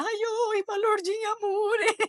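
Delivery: very high, drawn-out crying wail. Retelling arriving home to a crowd, imitating their crying and shouting. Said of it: "chorando e gritando".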